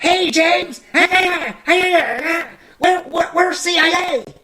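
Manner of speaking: weird, very high-pitched squeaky voice. Recalling weird characters from the films, doing the weird CIA guy voice. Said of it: "they would have that weird voice like the C I A guy".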